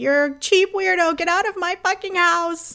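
put-on sudden furious outburst, a high angry yell. Imitating Jasmine snapping at Gino: imitating Jasmine yelling angrily. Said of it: "there's no build up to her anger".

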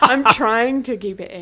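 speech broken by laughter.

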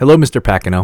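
mock sincere, respectful, earnest, eager tone. Imitating a coworker earnestly greeting pacino with a big smile: imitating an earnest greeting. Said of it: "he will go and just earnestly walk up to Pacino".

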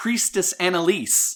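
shrill, very high, loud, excited shout. Voicing an excited character greeting a priestess: yelling in excitement. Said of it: "she yells".

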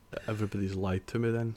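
ordinary talk

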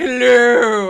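very loud, booming, belted-out call. Comparing two characters' voices from the dub: Pegasus voice. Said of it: "Pegasus, and he's like".

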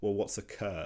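ordinary delivery

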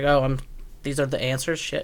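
normal talking voice

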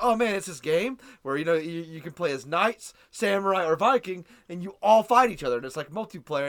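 ordinary talk, nothing marked

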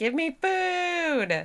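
very high, angry, demanding hungry cat voice, "food" stretched. Doing an impression of the household cat at feeding time: hungry, pissed-off cat voice. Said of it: "what I imagine when I think of like a hungry, pissed off cat".

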